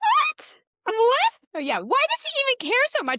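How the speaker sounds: very high-pitched, very loud, outraged cry. Recapping a show, the speaker quotes Belly in Belly's high-pitched voice. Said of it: "her voice is like speaking high".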